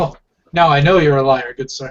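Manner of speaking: playful, joking, teasing delivery. In a roleplay, the speaker's character answers another character in a joking tone. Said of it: "says with a joking tone".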